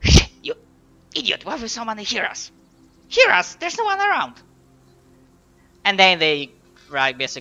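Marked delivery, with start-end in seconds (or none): 0.4-4.3 much higher, louder bickering creature voice. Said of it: "continue into bickering".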